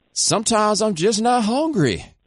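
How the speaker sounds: put-on country accent. Imagining one of the players talking to a woman who wrote about him: super country voice. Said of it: "with the super country's voice saying".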